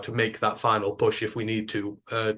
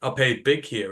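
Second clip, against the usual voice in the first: ordinary talk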